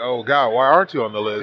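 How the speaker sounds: plain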